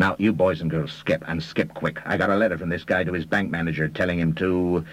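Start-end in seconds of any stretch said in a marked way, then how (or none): none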